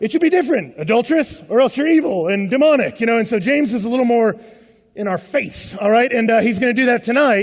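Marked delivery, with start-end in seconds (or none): 0.0-3.0 barking drill sergeant voice. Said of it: "it's more like".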